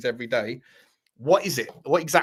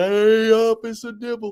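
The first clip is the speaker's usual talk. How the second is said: loud, pitched-up, drawn-out cartoon bear voice; 8 semitones higher, 6 dB louder than usual. Speaker showing off cartoon voice impressions: Yogi Bear voice. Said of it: "that was just Yogi Bear".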